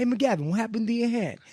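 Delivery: imitated New York accent. Quoting his dad's line from a video they've watched many times, imitating a New York accent. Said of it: "this super like New York".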